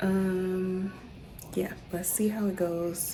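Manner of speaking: soft, hushed whisper. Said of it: "I'm whispering because Soul is asleep".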